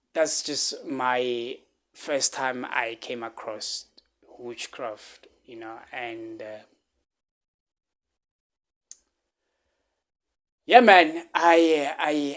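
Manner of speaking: choked up, holding back tears. Sharing a story of first coming across witchcraft: getting emotional, holding back tears. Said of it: "I'm getting emotional".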